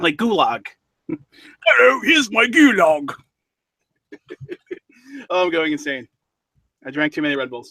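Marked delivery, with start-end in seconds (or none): 1.6-3.1 clumsy put-on British accent, high and slow. Showing off a british accent by saying british words: put-on british accent. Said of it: "my again British accent".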